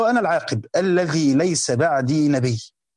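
ordinary talk, nothing marked

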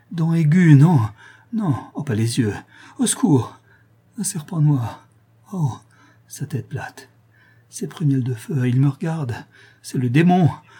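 crying out in a faltering, halting, broken voice. Narrator reads a man struggling against something invisible, crying out, broken voice. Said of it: "s'écriant d'une voix entrecoupée".

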